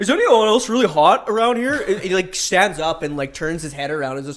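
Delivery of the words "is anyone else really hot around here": loud, pitched-up blurt, projected to carry. Telling a story about a guy on a hot bus, imitating a loud guy. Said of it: "he was talking so loud".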